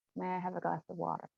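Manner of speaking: assumed American accent. Answering a request to try an American accent: American accent. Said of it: "attempt an American accent".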